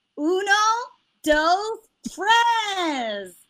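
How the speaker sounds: put-on high, swooping kids'-show voice, "tres" stretched out. Asked by the other speaker to do the voice, Dora the Explorer voice. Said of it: "Can you do a Dora the Explorer voice?".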